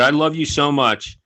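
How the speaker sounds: usual speaking voice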